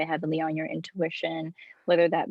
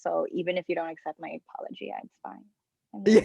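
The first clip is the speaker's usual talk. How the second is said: ordinary delivery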